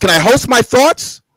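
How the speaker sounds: high-pitched yelling. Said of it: "Stop yelling, dude".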